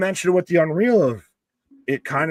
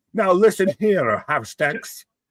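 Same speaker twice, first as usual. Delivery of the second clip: stern voice, dragged out slowly; 4 semitones higher than usual. Acting out a backstage skit as the father-in-law: Santino impression. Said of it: "Santino being like".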